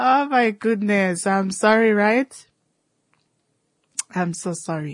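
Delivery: speech broken up by laughter throughout. Speaker breaking off mid-explanation to apologize: laughing while talking. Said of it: "I'm laughing at something here".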